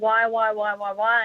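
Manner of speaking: put-on crying. Recalling a sudden death, speaker acts out past self: retelling own crying. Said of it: "I'm crying my my eyes out".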